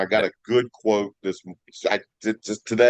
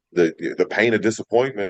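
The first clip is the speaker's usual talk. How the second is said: ordinary talk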